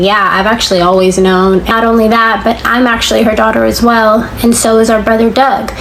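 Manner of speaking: normal talking voice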